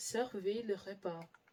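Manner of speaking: plain reading voice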